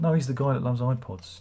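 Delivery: ordinary delivery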